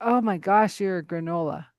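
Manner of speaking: plain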